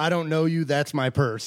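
loud, high, shrill hollering at full tilt. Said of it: "he's yelling".

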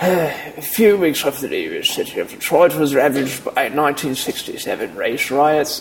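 put-on British accent, old man voice. Rereading a news sentence in a put-on accent, sounding like an old british guy. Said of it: "Sound like an old British guy".

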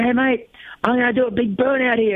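high, called-out voice.

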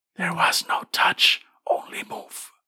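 slow, high, ghostly, eerie breathy whisper. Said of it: "you distinctly hear the whisper back".

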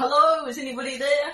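loud, high calling out. Voicing a character at a village entrance, calling out. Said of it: "and call out".

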